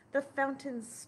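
ordinary delivery, nothing marked

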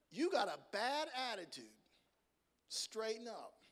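put-on plain-spoken Southern US accent with swooping pitch. Telling how the Lord speaks to him and corrects him: God's voice, southern accent. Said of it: "he speaks to me with a southern accent".

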